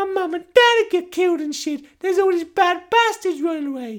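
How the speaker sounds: put-on whiny, upset, sad little kid voice, very high. Retelling a scene where a little kid answers a question: imitating a sad kid. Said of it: "the kid's like all sad".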